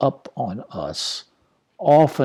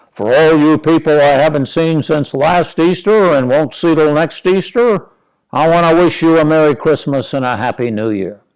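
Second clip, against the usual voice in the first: loud, grand, sarcastic, booming preacher-style delivery; 3 semitones higher, 7 dB louder than usual. Retelling Dad addressing the congregation after the service, in a booming announcing voice. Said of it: "in his best and most booming voice announce".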